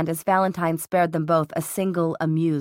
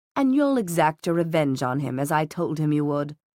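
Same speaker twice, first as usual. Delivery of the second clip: usual speaking voice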